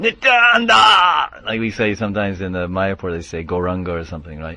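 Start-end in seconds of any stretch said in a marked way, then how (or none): 0.0-1.4 very high, slow, drawn-out ecstatic yell. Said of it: "he would yell".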